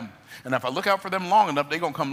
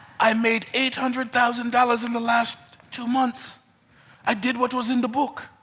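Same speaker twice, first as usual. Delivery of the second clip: terrible, fake, put-on French accent; 7 semitones higher than usual. Speaker quotes a man who bought his inner circle, terrible french accent. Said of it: "This is a terrible French accent".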